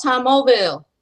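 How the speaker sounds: Southern American pronunciation of the name. Saying a man's name the way a Southerner would, name in a Southern accent. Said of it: "You gotta you gotta say it Southern because he's from the South".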